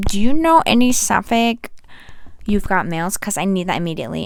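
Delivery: ordinary talk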